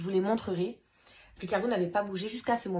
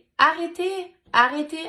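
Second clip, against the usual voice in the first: put-on tiny little-girl voice, very high, shrill and loud; 9 semitones higher, 9 dB louder than usual. Retelling how the daughter cried out during a fight, imitating a little girl's small voice crying out. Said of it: "avec sa petite voix".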